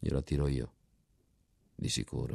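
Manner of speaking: plain reading voice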